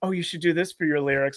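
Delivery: mock enthusiastic, put-on eager tone. Retelling one performer eagerly giving another lyric advice: imitating enthusiastic advice. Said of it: "enthusiastically giving [name] some lyrical advice".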